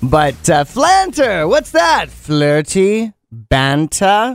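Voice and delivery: terrible put-on British accent. Explaining a slang word to the audience, in a terrible British accent. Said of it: "I'm using a terrible accent".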